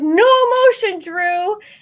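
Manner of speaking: very high-pitched, loud screamed delivery. Retelling calling out to a competitor during a match: retelling a scream. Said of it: "I screamed out".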